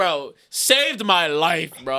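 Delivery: shouting. Thanking the man who helped at Guitar Center, yelling into the mic. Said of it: "I know I'm yelling to the mic".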